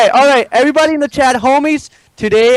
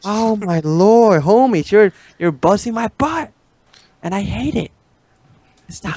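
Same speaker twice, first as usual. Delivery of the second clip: hushed whispering; 3 dB quieter than usual. Complaining to friends that they are busting his butt, whispering. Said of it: "I wanna keep whispering".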